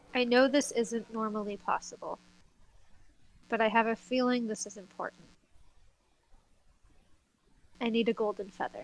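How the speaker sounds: whispering. Praying in character to Serafina for a golden feather: whispered prayer. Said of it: "I'm going to whisper a prayer to Serafina".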